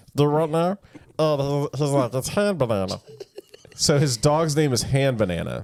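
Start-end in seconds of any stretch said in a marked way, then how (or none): 2.1-3.0 put-on cartoon character voice. Retelling a cartoon episode, doing Meatwad's line: Meatwad voice. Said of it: "That talks like this".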